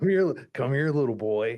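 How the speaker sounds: horror-movie clown voice calling out. Imagining the monster from It calling out from a sewer grate: It voice. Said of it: "And he's just like".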